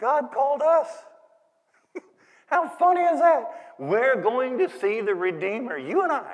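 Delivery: giggly, high-pitched speech through giggles. Retelling telling a friend news while giggling: retelling while giggling. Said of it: "I was just giggling".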